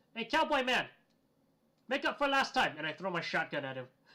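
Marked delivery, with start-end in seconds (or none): 0.1-2.7 high, loud yell. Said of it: "I yell".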